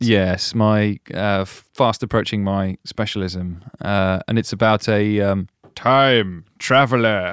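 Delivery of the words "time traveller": hesitant time-traveller character voice. Introducing a news story about a time traveller: Tom Baker impression. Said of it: "I tried to do an impression there".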